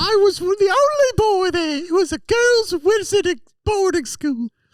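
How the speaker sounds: high-pitched, affected put-on voice. Playing a wizard from a girls' boarding school: high-pitched put-on voice. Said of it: "you could talk a little deeper".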